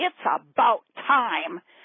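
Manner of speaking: lightly sketched grand, big voice. Retelling how a woman swooped down on your booth during setup: imitating a big booming voice. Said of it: "says in this big booming voice".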